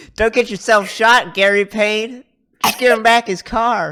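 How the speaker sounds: piercing, shrill shriek, very high and loud. Retelling a woman screaming a man's full name, retelling a scream. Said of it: "Lara screams".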